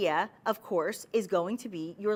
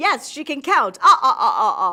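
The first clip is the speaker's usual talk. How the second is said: booming voice with laugh "ah-ah-ah"; 4 semitones higher, 13 dB louder than usual. While counting emerald cuts aloud, the speaker breaks into a The Count impression. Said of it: "that was my impression of The Count".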